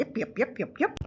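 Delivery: put-on peeping baby-chick chatter voice. Imagining what the little chicks would say: voicing little chicks. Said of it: "these little chicks look like they'd be going".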